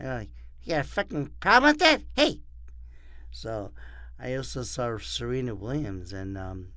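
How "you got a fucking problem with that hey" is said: very loud, rushed, fast tough-guy yell. Retelling heckling at a tennis match after the umpire shushed him: Joe Pesci impression. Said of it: "like Joe Pesci".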